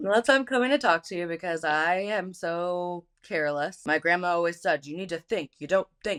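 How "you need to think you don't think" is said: put-on, fast, heavy, big German accent. Quoting what grandma always said, imitating grandma's big German accent. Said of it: "in her big German accent".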